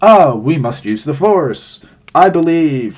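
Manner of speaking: stiff, lifeless, wooden flat line reading. Mocking a Disney show's terrible voice acting by quoting a line, wooden bad voice acting. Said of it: "it's really wooden".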